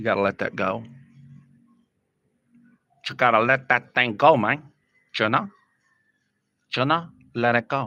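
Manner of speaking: gangster-style delivery. Giving advice about being rattled in front of others: Scarface impression. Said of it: "That's my best Scarface impression".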